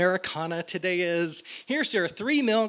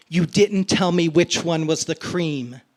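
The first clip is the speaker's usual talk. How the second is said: put-on loud angry voice, lower and louder; 4 semitones lower, 5 dB louder than usual. Retelling an angry costar's complaint backstage: imitating someone saying it loudly and angrily. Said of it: "says to me loud enough so people can hear".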